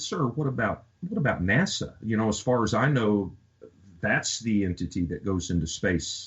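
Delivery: plain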